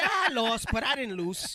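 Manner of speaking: put-on very slow, high, drawn-out Spanish accent. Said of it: "He said it like that with the Spanish accent".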